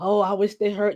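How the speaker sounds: ordinary delivery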